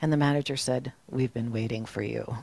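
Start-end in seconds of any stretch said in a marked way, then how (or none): 1.1-2.4 mock expressionless, dead-level, low and quiet. Retelling the manager's answer to Edward, retelling a deadpan reply. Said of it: "Very deadpan".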